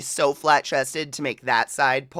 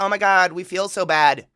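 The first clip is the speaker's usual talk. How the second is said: sarcastic put-on Canadian accent, higher pitched; 4 semitones higher than usual. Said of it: "they're all like".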